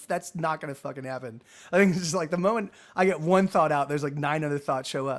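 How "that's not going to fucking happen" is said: usual speaking voice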